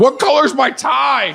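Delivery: mock very high, drawn-out screaming yell. Retelling a bit where the crowd walks out: imitating own screaming. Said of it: "I'm screaming at them".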